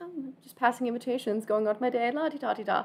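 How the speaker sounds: nonchalant, unbothered air. Voicing a character passing out invitations to everyone: very unbothered. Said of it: "Very unbothered".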